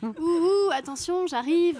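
high-pitched ghost voice. Mocking the ghost as not credible, doing its voice: high-pitched ghost voice. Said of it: "le fantôme à la voix aiguë".

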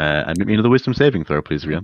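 ordinary talk

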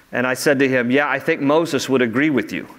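plain

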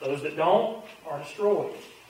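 plain

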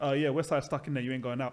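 put-on offhand, unbothered, casual, blasé delivery. Retelling how someone broke bad news: imitating Afro's blasé delivery. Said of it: "he just said it so blasé".

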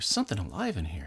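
quiet, subdued put-on voice. Jeff and Rick compare who does the better Luke voice; Luke voice. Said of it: "Who has the better Luke voice?".

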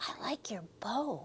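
hushed, soft whisper. In class, a girl whispers to the classmate seated behind her: whispered. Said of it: "whispered Angela".

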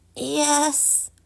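small, high, croaky frog voice. Narrator reads the frog's answer to Poppy, croaked. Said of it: "croaked the frog".

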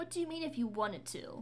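sneering, withering, scornful, contemptuous. Mara responds to Luke's account, speaking scornfully. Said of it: "Mara said scornfully".

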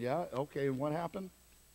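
plainly sarcastic, offhand, play-acted sympathetic tone. Acting out own reply when people come to the office: acting out a sarcastic reply. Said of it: "I was being sarcastic".

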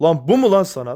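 loud angry outburst.

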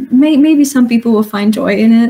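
plain

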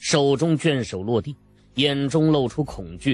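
ordinary delivery

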